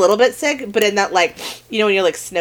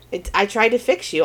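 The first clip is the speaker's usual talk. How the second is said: normal talking voice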